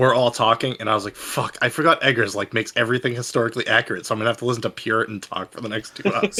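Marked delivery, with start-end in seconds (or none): none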